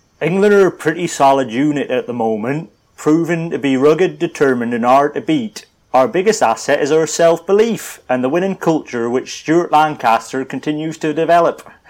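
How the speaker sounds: accent from Cornwall. After asking which comedy English accent to do this time, deliver it in a comedy Cornish accent. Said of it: "I'd go Cornish".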